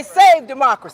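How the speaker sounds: ordinary talk, nothing marked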